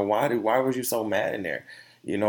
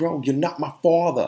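put-on everyday New Jersey accent, higher in pitch; 6 semitones higher, 4 dB louder than usual. Retelling how he told off a man who was talking, in a new jersey accent. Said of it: "that New Jersey accent".

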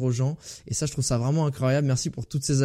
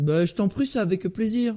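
put-on southern French accent, pitched up; 7 semitones higher than usual. Answering a guest's thanks at the end of a podcast: put-on southern french accent. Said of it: "je prends l'accent du Sud".

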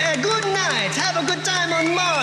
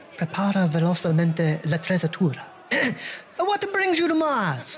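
put-on, fake Italian accent; 11 semitones lower than usual. An old acquaintance greets a touring band on mars; fake italian accent. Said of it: "Are you still faking that Italian accent?".

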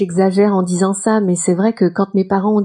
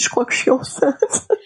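mock, tearful, crying voice; 5 semitones higher, 3 dB quieter than usual. Retelling words said to the husband at breakfast: imitating own crying. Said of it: "puis en pleurant".

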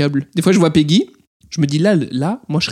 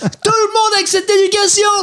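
angry rant with the voice very high. Speaker recounts blowing up at people around them; retelling own angry rant. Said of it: "je me pète des câbles".

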